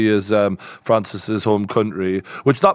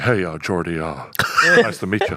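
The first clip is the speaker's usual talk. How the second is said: 1950s rock-and-roll singer voice; 4 semitones lower than usual. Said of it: "he had this, like, [name] voice".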